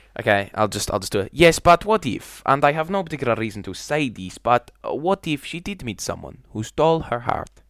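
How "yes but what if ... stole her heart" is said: Spanish accent in a pitched-up voice. Giving the others a line when asked: Gomez Spanish accent. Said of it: "can you give us a line?".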